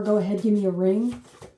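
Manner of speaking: plain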